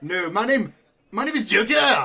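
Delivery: put-on gradually slipping into a French accent. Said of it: "You're turning French".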